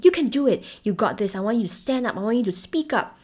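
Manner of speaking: rousing, encouraging, motivating pep-talk voice. Demonstrating different voices to listeners, the motivating voice. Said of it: "the more motivating voice".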